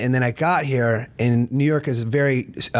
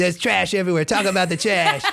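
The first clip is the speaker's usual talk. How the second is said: put-on New York accent, spoken higher; 7 semitones higher than usual. Chatting about how New Yorkers would react, speaker riffs in a New Yorker accent. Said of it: "I love your New Yorker accent".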